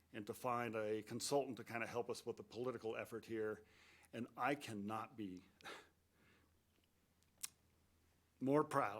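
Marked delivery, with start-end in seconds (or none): 4.1-9.0 emotional, much slower. Addressing Mark and colleagues about working with staff and council, getting emotional. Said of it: "Give me a minute here".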